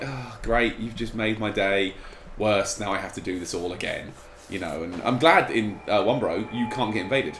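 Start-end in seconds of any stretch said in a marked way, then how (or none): none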